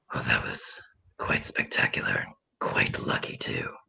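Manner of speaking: sly, low, whispered aside.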